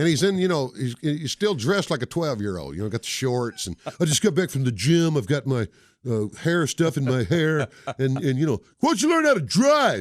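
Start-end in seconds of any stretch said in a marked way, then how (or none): 8.8-10.0 mock, very high, loud, snide, rude yell. Speaker retells a man in his way yelling at them, retelling a rude yell. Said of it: "he yells out something".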